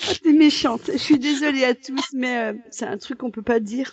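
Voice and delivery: laughing to tears through the words. Ending a talk with another speaker, unable to stop: crying with laughter. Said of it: "je suis en train de pleurer".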